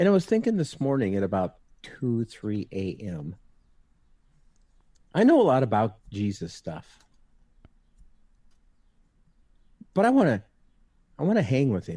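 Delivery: choked-up, emotional voice, catching. Saying he wants to truly know Jesus, getting choked up. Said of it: "I'm gonna get a little choked up here".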